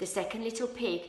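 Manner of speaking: ordinary delivery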